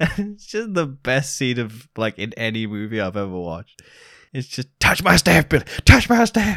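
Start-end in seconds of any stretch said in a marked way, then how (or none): 4.8-6.6 put-on very high, rushed, fast yelling. Describing a favorite movie scene, the speaker acts out a character yelling at a child. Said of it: "yells at a child to touch his staff".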